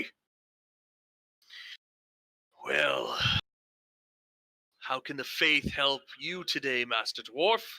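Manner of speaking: rough, gruff voice. The narrator voices a man greeting the dwarf player while no services run: gruff voice. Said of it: "he greets you with like a you know gruff voice".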